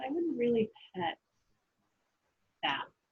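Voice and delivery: little, small-sounding voice. Game master voicing an unseen speaker to the player; very quiet voice. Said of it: "you do hear a very quiet voice go".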